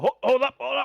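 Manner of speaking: very high shout. Voicing dwarves who hear digging from the other side: dwarves calling to hold up. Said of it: "the dwarves all go".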